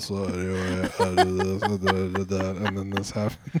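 total flat monotone, one level drone. Imitating how Charlie would tell a story, Charlie monotone impression. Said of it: "in, like, a total monotone. ... it sounds like if Charlie was telling you a story right now".

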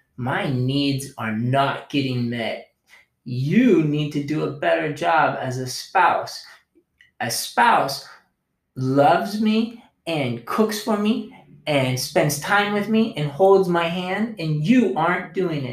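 hard, mean, harsh, critical, demanding tirade. Speaker acts out a spouse coming at their partner, mock hard, critical, demanding. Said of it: "I come at you hard and critical and mean and demanding".

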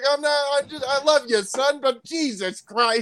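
mock yelling. Retelling a video where a crying father yells at his son, imitating yelling while denying it. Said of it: "Stop yelling".

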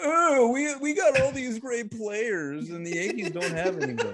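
put-on Boston accent, high, drawn out, unhurried. Recreating what Red Sox fans say about their players, impression of Red Sox fans. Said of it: "It's a pretty good impression".

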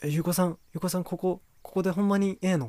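mock giddy, talkative gush, high and excited. Retelling how someone reacted on spotting it, imitating excited chatter. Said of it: "テンション上がってて口数めっちゃ増えて".

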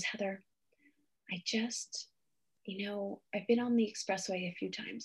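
put-on quiet voice. Retreat host recounts what a woman in the circle said, imitating someone speaking quietly. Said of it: "she said it very quietly in circle".

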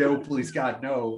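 mock, all-out, high-pitched screaming cry. Retelling a TV show scene of screaming at Toby: imitating someone screaming. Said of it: "And then he screams".

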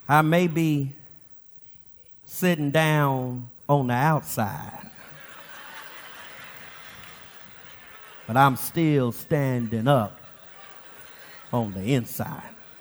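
soft, barely audible muttering under the breath. Retelling what a boy said while buckling up, mumbling under his breath. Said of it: "he mumbles under his breath".

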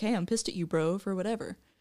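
soft, hushed, low-key, straight-up guy voice. Describing how men talk, quoting a typical man, in a put-on guy voice. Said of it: "That's my guy voice".

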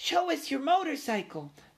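very high, squeaky little voice. Little cousins crowd around Ralph, begging to see his motorcycle; squeaky. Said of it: "they squeaked".

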